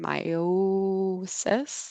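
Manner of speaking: said very slowly, drawn out. A speaker demonstrating a memory trick for a medical term, very slow. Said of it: "saying it very slow".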